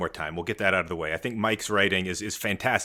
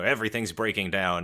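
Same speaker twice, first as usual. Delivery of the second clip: ordinary talk, nothing marked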